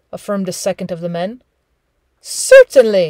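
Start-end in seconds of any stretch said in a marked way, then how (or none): 2.2-3.1 icily polite, louder. A sled driver replies to one of the men's remarks, with freezing politeness. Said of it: "said Hal with freezing politeness".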